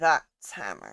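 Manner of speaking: hushed, low, confiding lean-in aside. Narrating a game, voicing the tiefling as it leans in: leaning in, quiet. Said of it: "lean in kind of quiet and go".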